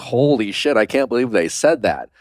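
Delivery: ordinary talk, nothing marked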